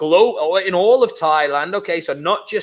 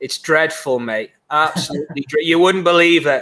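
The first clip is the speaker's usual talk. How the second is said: deadpan, dry, sarcastic mock grumbling. Answering how island life is going, mock complaint, sarcastic. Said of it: "my English sarcasm gets lost".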